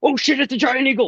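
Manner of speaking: alarmed, startled, voice shooting very high. Voicing a guard who sees a giant eagle arrive: startled guard. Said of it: "you hear this guy go".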